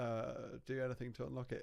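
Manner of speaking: quiet, soft, low, suggestive murmur.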